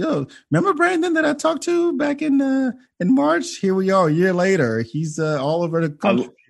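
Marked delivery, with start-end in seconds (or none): 0.0-4.8 own voice pitched higher with swooping tone. Imitating himself telling people about a past guest, in a higher voice. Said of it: "you did an impersonation of yourself with a higher voice".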